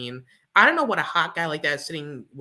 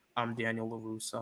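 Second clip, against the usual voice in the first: very quiet, low, flat monotone drone; 4 semitones lower, 11 dB quieter than usual. Teasing the listener about how they voiced Daniel LaRusso, in a quiet monotone voice. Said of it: "he's talking so quiet".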